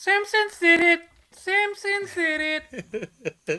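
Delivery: annoying squeaky voice, very high, very loud, drawn-out. Imitating how a viewer's comment sounded in the head: high-pitched annoying voice. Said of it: "I read that comment with that fucking high-pitched, annoying voice".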